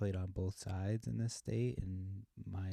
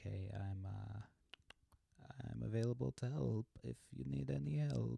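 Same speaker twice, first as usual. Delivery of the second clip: slow, odd, weird put-on Eastern European accent; 4 semitones higher, 3 dB quieter than usual. Imagining a text they might send tomorrow, in a weird Eastern European accent. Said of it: "I just did a weird middle uh, Eastern European".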